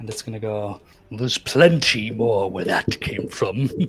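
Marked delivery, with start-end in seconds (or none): 1.1-3.7 thunderous, booming, thundering voice. Narrating a scene, voicing the voice that comes from the tower, booming voice. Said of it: "you're going to hear a booming voice from the tower".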